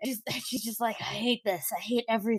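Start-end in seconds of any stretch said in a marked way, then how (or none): 1.0-2.4 soft, tired, worn-out little grumble. Describing how she replies, voicing her as mock-tired. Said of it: "a little tired".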